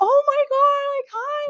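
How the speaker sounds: very high, loud, starstruck fangirl gushing. Recalling running into someone they were a huge fan of, retelling own fangirling. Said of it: "super fangirling over this dude".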